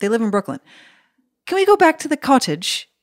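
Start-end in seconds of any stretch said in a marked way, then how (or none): 1.5-2.8 put-on very high child's voice with faint English lilt. Speaker quoting a girl who loves Peppa Pig, imitating her slight English accent. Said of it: "There's a bit of an accent".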